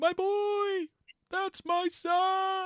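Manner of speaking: very high, very slow, "son" stretched out. Imagining a player's reaction to her painted model: Harry Potter voice. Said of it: "I was just doing Harry Potter".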